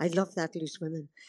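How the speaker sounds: imitated whisper. Retelling what a very elderly lady said in dublin: imitating a whisper. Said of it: "she whispered".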